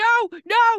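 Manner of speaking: high, loud screaming.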